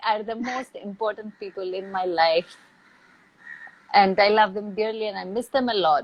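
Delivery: teary, rushed voice welling with tears. Speaking about sisters and mother, tearing up. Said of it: "and I'm going to tear up now".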